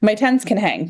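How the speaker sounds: plain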